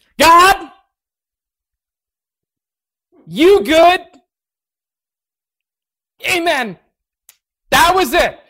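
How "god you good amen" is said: loud yell, pitched higher. Retelling his first prayer in front of a group: imitating his own yell. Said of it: "And I did yell".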